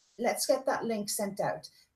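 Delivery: normal talking voice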